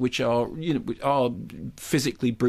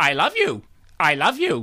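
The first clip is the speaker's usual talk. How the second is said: put-on slow, swooping, menacing stuffed-toy bear voice; 4 semitones higher, 4 dB louder than usual. Asked what voice the teddy bear has, speaker demonstrates: threatening teddy bear voice. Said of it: "in a way that sounds really threatening".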